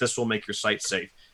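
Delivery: ordinary delivery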